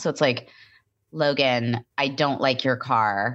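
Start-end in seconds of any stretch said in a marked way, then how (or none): 1.1-3.4 put-on low nasal voice, lower pitch. Imitating a woman being discussed, low nasal voice. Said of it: "I do kind of sound like her now".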